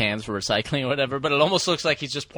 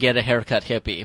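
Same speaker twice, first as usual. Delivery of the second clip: ordinary talk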